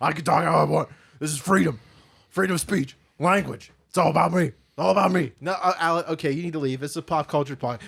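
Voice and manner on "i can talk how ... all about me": loud, bellowing, raised-voice rant. Doing a character called Alec Phones on a podcast: Alex Jones impression. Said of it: "Alec Phones is the perfect combination of Alex Jones".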